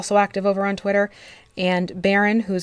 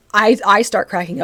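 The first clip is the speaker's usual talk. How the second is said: ordinary talk, nothing marked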